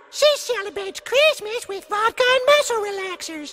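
ordinary talk

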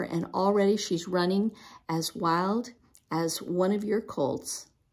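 ordinary delivery

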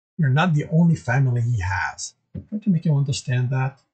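plain

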